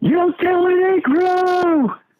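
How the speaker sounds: very high, drawn-out, top-of-the-lungs yell. Speaker recounts a man belting a line out to trainees, at the top of his lungs. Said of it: "at the top of his lungs".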